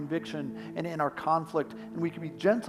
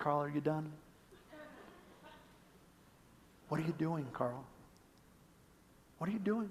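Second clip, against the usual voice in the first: kind, hushed, gentle, very soft voice; 11 dB quieter than usual. Voicing God answering the complaints: gentle voice of God. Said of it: "So gentle, so true".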